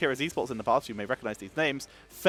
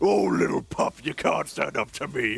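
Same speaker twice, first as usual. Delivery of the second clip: rough, menacing, burly orc voice. Demonstrating character voices, an orc about to strike you down, burly orc voice. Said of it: "a big burly orc who's just about to strike you down".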